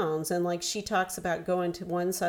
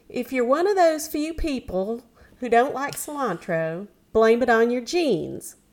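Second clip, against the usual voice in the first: pitched-up, put-on Southern accent; 5 semitones higher, 7 dB louder than usual. Speaker quoting a cooking show host: put-on southern accent. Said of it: "I'm going to put on her southern accent".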